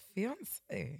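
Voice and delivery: drawn-out, unsure, slow and soft. Answering a quiz question from the other host, said slowly. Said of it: "did you see how I said that slowly?".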